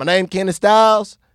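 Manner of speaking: put-on Southern American accent. Introducing himself under a changed name: fake Southern accent. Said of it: "I started talking with a fake Southern accent".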